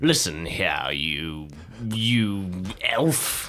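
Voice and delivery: very slow, hostile, menacing delivery. Speaking in character to an elf while glaring at him. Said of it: "I'm going to glare at him and I'm going to say".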